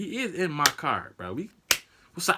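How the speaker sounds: usual speaking voice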